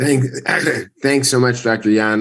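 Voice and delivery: sick, worn voice, still recovering. Thanking the introducer before a presentation: voice affected by covid. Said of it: "I apologize for my voice".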